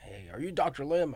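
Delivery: put-on high Southern American accent. Retelling a phone call from a Florida lawyer, quoting him in a southern accent. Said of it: "with a southern accent".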